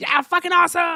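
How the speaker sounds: high, shrill, blaring, loud fake excitement. Host heading into a phone call, doing a voice someone says he can't: put-on excited voice. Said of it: "That was me being excited. Johnny said I can't do that voice".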